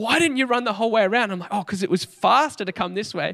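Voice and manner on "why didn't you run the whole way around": frantic, panicked, freaking-out voice. Retelling what mum said when the speaker reached her, imitating mum freaking out. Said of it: "she's freaking out".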